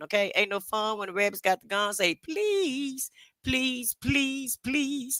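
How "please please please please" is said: every word stretched out, pitched high. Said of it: "in my [name] voice".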